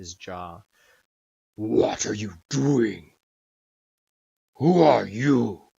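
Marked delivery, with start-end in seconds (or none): 1.5-5.5 very loud, booming, rough, gravelly dragon voice. A dragon responds to the party looking in his window, in a gravelly dragon voice. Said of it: "His gravelly voice just kind of emitted".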